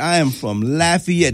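play-acted, sassy, slow, pointed tone with attitude. Retelling an answer to an airport security agent: imitating a reply with attitude. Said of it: "I said it with some, with attitude".

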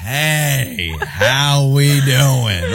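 slowed-down speech. Showing how people talk on walking into a barbecue restaurant, talking slower. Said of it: "you're talking slower".

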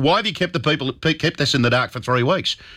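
ordinary talk

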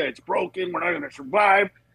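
ordinary delivery

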